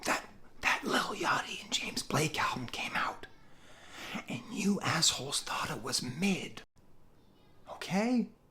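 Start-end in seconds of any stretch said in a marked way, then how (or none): 0.1-6.6 hushed, breathy, confiding whisper. Reviewing an album, doing a Joe Biden whisper. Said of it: "I'm gonna whisper like Joe Biden".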